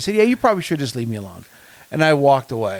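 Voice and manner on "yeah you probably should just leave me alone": acted, fast, irritated, fed-up tone. Recounting a car-buying visit, the speaker repeats what they told her: retelling an annoyed reply. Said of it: "I got really annoyed by it instantly".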